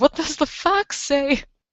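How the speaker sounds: voice breaking and cracking very high. Speaker voicing a character's question, voice cracking. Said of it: "my voice cracked there".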